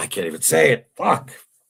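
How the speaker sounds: voice catching with emotion. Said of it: "I'm choking up now".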